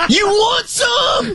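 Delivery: high, slow, shouted heckling yell. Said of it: "his buddy follows it up with this".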